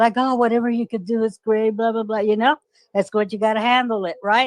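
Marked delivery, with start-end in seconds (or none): 0.2-2.2 put-on sweet, gentle manner. Retelling how they talk at the records office: imitating own sweet manner. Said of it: "the biggest sweetheart ever".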